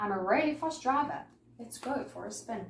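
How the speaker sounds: ordinary delivery, nothing marked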